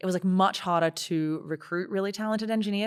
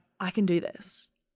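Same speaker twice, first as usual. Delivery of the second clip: put-on, softly spoken soft voice. Retelling what a contractor said on a beach walk: imitating a softly spoken voice. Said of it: "very softly spoken".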